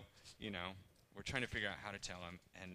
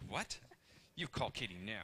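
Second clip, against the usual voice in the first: put-on serious, angry voice. Retelling her own reply to a woman about taking the clothes, retelling a serious angry voice. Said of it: "you see my serious, angry voice".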